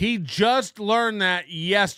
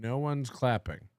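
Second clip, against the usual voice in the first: ordinary delivery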